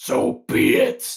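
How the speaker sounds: loud, real deep demonic voice. Retelling a game scene where the ai kid answers, in a deep demonic voice. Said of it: "with a real deep di- demonic voice".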